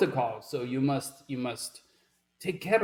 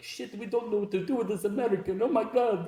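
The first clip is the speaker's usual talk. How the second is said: flustered, frustrated outburst, pitched up; 8 semitones higher than usual. Retelling how the frustrated young officials reacted: imitating the frustrated young officials. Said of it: "pretty good impression there".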